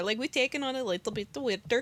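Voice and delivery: soft put-on Norwegian accent. Host bragging about doing accents, in a Norwegian accent. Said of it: "I could get the Norwegian accent going in there".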